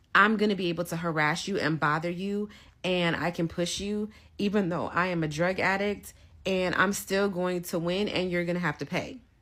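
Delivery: ordinary delivery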